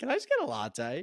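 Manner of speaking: bland, plain ordinary voice. Mocking a customer ordering in a Melbourne coffee shop: imitating a basic customer. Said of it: "being a basic bitch and be like".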